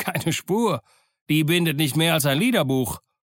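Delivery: contemptuous, scornful, sneering, mocking. Reading the story aloud, Silver replies to Dick, scornful. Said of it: "antwortete Silver höhnisch".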